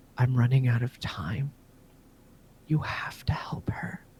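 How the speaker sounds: soft, weak, ill-sounding sickly whisper. Voicing a tree whispering to Buns, soft sickly whisper. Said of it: "a soft, very sickly voice of the tree whispers to you".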